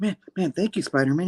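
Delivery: imitated huffing and puffing. Retelling a rescued man thanking Spider-Man: imitating huffing and puffing. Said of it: "all huffing and puffing".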